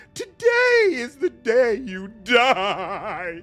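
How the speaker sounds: very high, very loud, inhuman, taunting, mocking voice. Reading out a transmission over the Voxcaster, in a mocking inhuman voice. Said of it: "A mocking, inhuman voice giggles hysterically".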